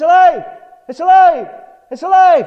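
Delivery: shrill, high-pitched, very loud cry. Retelling a man in a courtyard calling to gather a crowd, imitating someone crying out. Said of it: "and he would cry".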